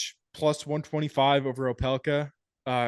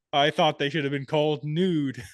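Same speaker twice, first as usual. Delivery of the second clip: ordinary talk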